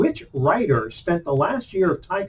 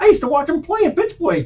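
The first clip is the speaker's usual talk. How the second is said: put-on very high-pitched old man's accent; 11 semitones higher than usual. Retelling what an old baseball fan told him, imitating an old man's accent. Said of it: "he had that kind of accent".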